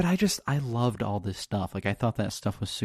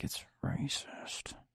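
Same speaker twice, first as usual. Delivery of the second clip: muttered under the breath, quieter. Retelling what friends said about the books: imitating someone muttering under their breath. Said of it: "under their breath".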